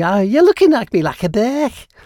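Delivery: put-on Liverpool accent. Quoting an outtake from an old studio blooper tape, Liverpool accent. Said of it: "saying Birk in a Liverpool kind of accent".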